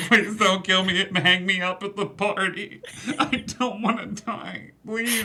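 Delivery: put-on weepy drunken sobbing. A broken man in the story speaks: weepy, drunken sobbing. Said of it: "in a weepy, drunken".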